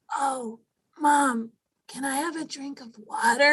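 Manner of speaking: put-on slow, raspy, sickly child voice. Imitating a six-year-old daughter asking for water: imitating a raspy sick voice. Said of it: "she'll get, like, really raspy".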